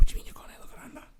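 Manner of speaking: hushed, whispered voice. Retelling his own question to his mate, whispering it. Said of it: "I'm whispering it".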